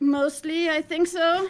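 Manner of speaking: very loud, high, panicked, half-confident. Answering another player while fighting mobs, sounding panicked. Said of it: "it doesn't sound too confident there".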